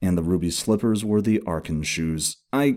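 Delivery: ordinary delivery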